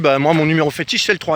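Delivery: ordinary talk, nothing marked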